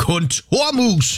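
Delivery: put-on shouting with full mouth. Retelling a dinner talk with their partner, the speaker re-enacts shouting with mouth full. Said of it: "Råber jeg sådan med kartoflen nærmest spytten ud".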